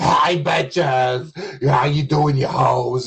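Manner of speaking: slow, scornful, derisive delivery. Mocking how another streamer greets viewers: mocking imitation of Hussey. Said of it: "'Cause Hussey's like".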